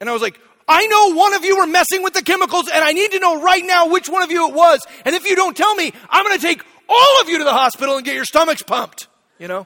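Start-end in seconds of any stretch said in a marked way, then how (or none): 0.7-9.1 very loud, very high, shrill, booming yelling. A dad retells confronting his kids, retelling shouting at his kids. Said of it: "I'm shouting at them".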